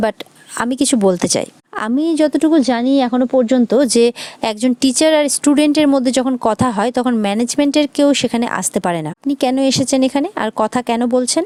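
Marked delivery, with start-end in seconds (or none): none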